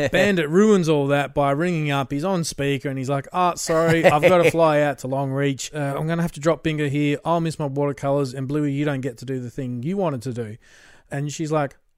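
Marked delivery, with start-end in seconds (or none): none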